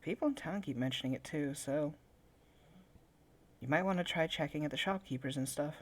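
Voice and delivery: hushed whisper. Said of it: "she's just kinda whispering it".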